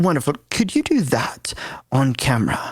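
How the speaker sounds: terrible put-on English accent. Retelling what the man who held up a piece of paper said, bad English accent. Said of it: "my English accent's terrible, but I'm gonna give it to you".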